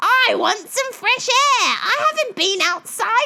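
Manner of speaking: ordinary delivery, nothing marked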